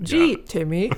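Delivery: happy bright voice turning robotic. Pitching a skit where a device says a name, happy bright then robotic voice. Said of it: "like in a really happy, bright voice, but then a robotic voice".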